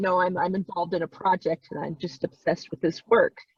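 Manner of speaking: ordinary talk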